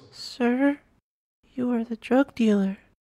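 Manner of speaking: very high, soft, timid, nervous little voice. A little girl stands up to address a stranger, soft but nervous. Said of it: "she said in a soft but nervous voice".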